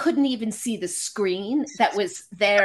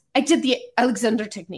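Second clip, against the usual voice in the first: heavy, strong put-on French accent. Retelling an interview for Premiere Magazine, imitating a woman's strong French accent. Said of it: "she says it in this strong French accent".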